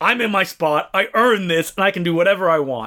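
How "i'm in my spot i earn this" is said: usual speaking voice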